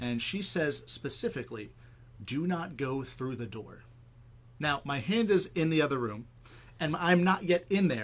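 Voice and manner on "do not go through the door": put-on whispering voice of a little girl. Recounting a house visit, the speaker quotes a voice heard in the master bath; retelling a little girl's whisper. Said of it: "I hear a whispering little girl's voice".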